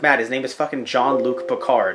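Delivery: normal talking voice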